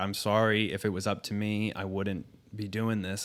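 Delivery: put-on crying, tearful voice. Retelling how she apologized after she started crying: imitating someone crying. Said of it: "she started crying".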